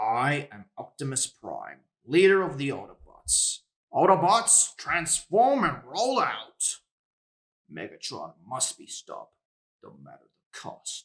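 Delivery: loud, booming robot-leader voice with big swooping swings. Asked to try a voice impression, doing an Optimus Prime impression. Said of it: "voice impressions".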